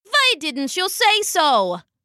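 ordinary delivery, nothing marked

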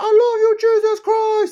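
stretched-out holler, very high and very loud. Describing a dancer who went viral at churches, acting out his yell: retelling a yell. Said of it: "he's all like yelling like".

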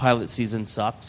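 ordinary delivery

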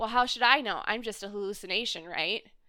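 mock sarcastic, dismissive, snide, snarky tone. Retelling a character's reply on a TV show: imitating a snide remark. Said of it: "kinda snidefully".

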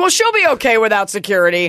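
usual speaking voice

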